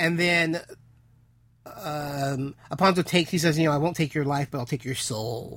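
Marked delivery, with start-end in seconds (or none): none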